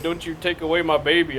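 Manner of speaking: put-on tearful voice. Retelling a scene where a companion cries: imitating Belinda crying. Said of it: "when she was crying".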